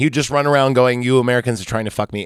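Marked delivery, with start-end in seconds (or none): none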